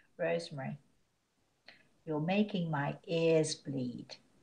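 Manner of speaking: tender, kindly, soft, gentle loving tone. Retelling what a man once told her, imitating his gentle voice. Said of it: "he said to me very gently".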